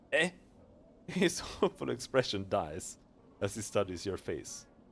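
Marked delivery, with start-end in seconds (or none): none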